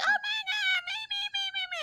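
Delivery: very high, sweet, cute, dainty little voice. Retelling a phone call with a girl, imitating Joy's cute dainty voice. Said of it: "she got this cute little dainty voice".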